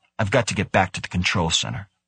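plain

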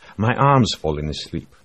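ordinary delivery

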